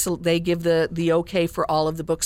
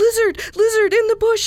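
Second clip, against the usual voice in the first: hurried, breathless calling out, high and loud; 6 dB louder than usual. Narrator reads Alexander calling to the lizard in the bush, calling quickly, out of breath. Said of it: "he called quickly".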